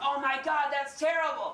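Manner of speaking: high, play-acted, screamed shrieking outburst. Retelling an audience member's reaction to statistics: imitating someone screaming. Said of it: "a lady on a back row screamed out".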